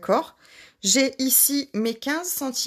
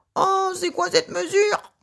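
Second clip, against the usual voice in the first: mock indignant, outraged cry, pitched up; 8 semitones higher than usual. Guessing how viewers react to an odd measurement: imitating viewers crying out. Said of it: "c'est ici que vous criez en disant".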